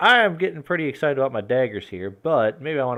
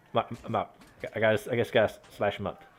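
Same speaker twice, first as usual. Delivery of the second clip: normal talking voice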